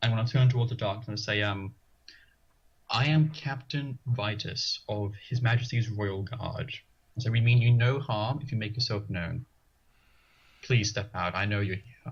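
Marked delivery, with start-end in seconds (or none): 2.9-12.1 very calm, steady, commanding, full of authority. Stepping into the hallway and speaking toward the dark, calm and authoritative. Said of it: "I say very calmly, as calmly as I can, with as much authority as I can muster".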